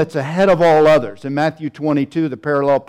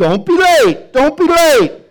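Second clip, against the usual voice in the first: very high, shrill, loud, drawn-out yell; 11 semitones higher, 5 dB louder than usual. Retelling someone being loud in the dorm this morning: imitating someone screaming. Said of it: "somebody was screaming".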